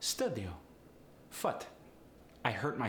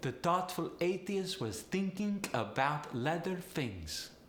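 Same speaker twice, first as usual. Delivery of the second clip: high Polish accent with TH sounds swapped. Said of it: "when speaking with Polish accent".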